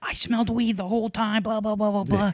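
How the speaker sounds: put-on very high screaming tirade. Retelling how she finally started screaming at the group, imitating her screaming. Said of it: "she just starts screaming".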